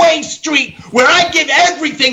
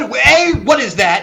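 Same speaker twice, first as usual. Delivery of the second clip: ordinary talk, nothing marked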